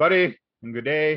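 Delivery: put-on Canadian accent. Asked to do an accent, say a few words in a full Canadian accent. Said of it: "you went full Canadian".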